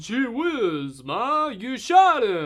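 very loud, booming, slow voice with swooping pitch. Retelling a movie scene, quoting the son: Sylvester Stallone voice. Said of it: "Sylvester Stallone's all like".

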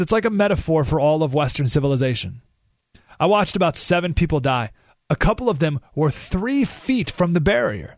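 plain

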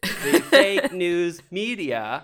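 very loud, very slow, drawn-out word-by-word teleprompter reading. Mocking a politician reading from a teleprompter: imitating someone reading a teleprompter. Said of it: "when he reads that fucking teleprompter".

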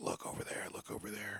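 very quiet, soft, breathy whisper. Retelling a hunting guide pointing out a bull before dawn: imitating a whisper. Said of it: "the guide's, like, whispering".

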